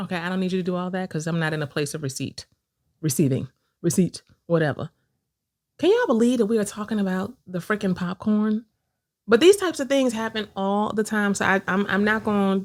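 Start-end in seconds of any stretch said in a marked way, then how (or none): 0.0-8.6 annoyed, irritated, fed-up talk. Answering another speaker during a popcorn dispute: irritated. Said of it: "I'm so irritated right now".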